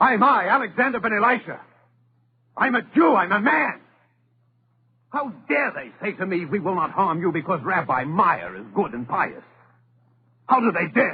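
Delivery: loud, indignant protest. Alexander, told not to raise his voice, insists on answering: raised voice. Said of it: "I want to raise my voice".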